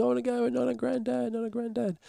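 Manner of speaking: mock desperate crying scream, very high. Parent retells older daughter's reaction on leaving: imitating daughter crying and screaming.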